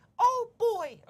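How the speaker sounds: very high, squeaky cartoon voice. Reacting to news about a Disney dating app: Mickey Mouse voice. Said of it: "I was trying to sound like Mickey Mouse there".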